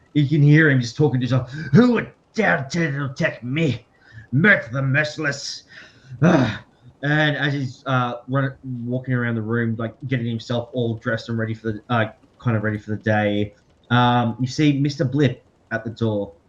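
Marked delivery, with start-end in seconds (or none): 1.7-6.6 outraged, wrathful, furious tone. Narrator voices Mert talking to himself as security forces converge, furious. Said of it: "and Mert is furious".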